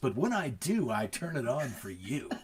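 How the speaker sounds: radio DJ announcer delivery. Replying to a compliment about being good at radio: radio voice. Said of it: "I don't always try to turn on my radio voice".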